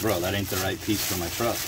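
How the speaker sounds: ordinary delivery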